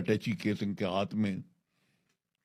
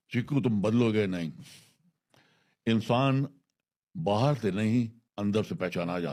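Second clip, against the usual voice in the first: ordinary delivery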